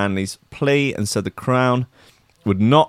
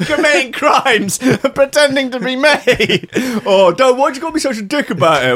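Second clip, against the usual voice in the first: put-on stressed rant, much higher, louder; 5 dB louder than usual. Retelling an exchange with someone, mock-stressed rant. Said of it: "don't get stressy".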